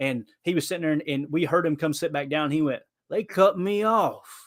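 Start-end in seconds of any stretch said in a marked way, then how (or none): 3.1-4.4 put-on very slow, slurring, drunk-sounding southern accent. Retelling what the drunk guy behind them said on sitting back down, in a put-on drunk southern slur. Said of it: "I'm using a southern accent".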